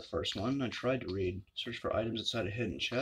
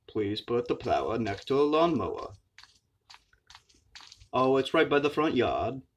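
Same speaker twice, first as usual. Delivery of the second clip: put-on Maine accent; 5 dB louder than usual. Saying a line while playing a game: put-on Maine accent. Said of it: "My Maine accent".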